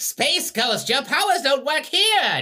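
very loud, very high, swooping villain yell. Playing the band member as a bad guy: Space Ghost villain voice. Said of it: "Sounds like a bad guy in Space Ghost".

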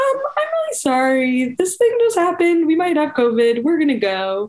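meek, embarrassed tone. Retelling leaving a session after a covid scare: imitating a sheepish apology. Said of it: "very sheepishly were like".

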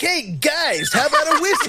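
high, laughing mock advertisement announcer pitch.

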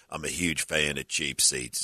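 very deep, dropped-low bass voice. Retelling what a tall fan said when he came over: deep voice imitation. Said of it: "deep, deep voice".

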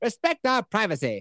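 put-on Canadian accent. Retelling a cartoon scene where a couple demands privacy: South Park Canadian voice. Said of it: "South Park does the Canadian shit".

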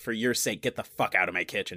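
ordinary talk, nothing marked

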